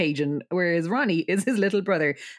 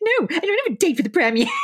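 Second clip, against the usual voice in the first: very high, silly, mocking put-on voice; 12 semitones higher, 5 dB louder than usual. Retelling how a girl answers by mimicking the one who asked, in a silly voice. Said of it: "Like a silly voice".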